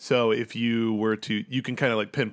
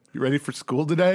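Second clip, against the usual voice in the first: sarcastic and mocking, laughing, higher and louder; 5 semitones higher, 4 dB louder than usual. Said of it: "And he'll laugh sarcastically".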